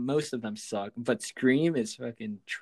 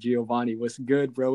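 plain

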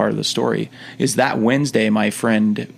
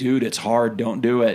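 joking, jokey tone. Recalling a man who challenged him before his mission, jokingly quoting him. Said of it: "he jokingly was like".

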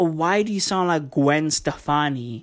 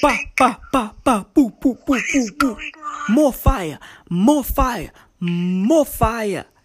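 put-on Caribbean accent, higher pitch; 8 semitones higher, 4 dB louder than usual. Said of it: "that's [name] when she speaks".

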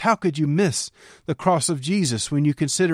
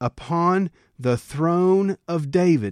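very slow, deliberate, drawn out word by word; 2 semitones higher than usual. Speaker reads a scripture passage aloud, saying it very slowly. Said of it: "I'm saying that so slow".

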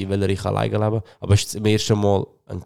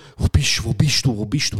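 acted, mock-panicked voice; 2 semitones higher than usual. After missing the train, speaker imitates people panicking at him. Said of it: "Leute tun mir panisch an".

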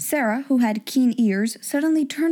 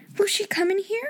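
panicked whisper, much higher; 9 semitones higher than usual. Narrator reads Ermengarde whispering back to Sarah in the dark: panic-stricken whisper. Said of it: "Ermengarde whispered back, panic-stricken".

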